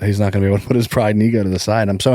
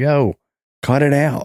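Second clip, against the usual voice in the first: very slow, high, stretched-out, drawn-out scolding; 6 semitones higher than usual. Retelling how they react to noisy kids: imitating screaming at the kids. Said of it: "I scream at the kids".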